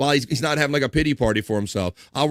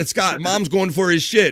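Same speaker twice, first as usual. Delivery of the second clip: plain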